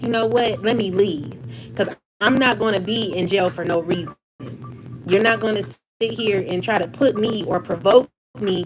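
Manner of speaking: ordinary talk, nothing marked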